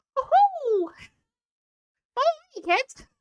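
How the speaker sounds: very high cartoon mouse character voice. Showing how greeting chat visitors comes out: Mickey Mouse voice. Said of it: "I turn into a Mickey Mouse character".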